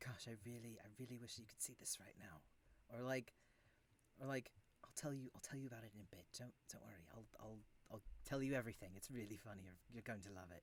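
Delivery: very quiet, very low murmur under the breath. Voicing a laughing character talking to someone unseen: muttering under his breath. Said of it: "just under his breath".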